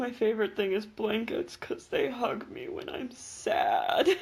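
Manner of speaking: mock exaggerated, mopey emo delivery. Teasing the co-host by repeating their answer in a mock-emo delivery. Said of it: "the most emo way you could have said anything".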